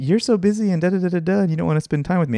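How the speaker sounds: put-on sarcastic tone. Quoting what she said this week while pretending: mock-sarcastic quote. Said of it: "she was being sarcastic".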